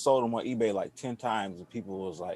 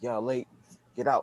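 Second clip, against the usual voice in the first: strict, no-nonsense, scolding voice; 3 semitones higher than usual. Retelling how his mom, an art teacher, ordered late kids out: imitating a strict mom. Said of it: "she don't take no mess".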